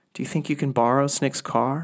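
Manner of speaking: plain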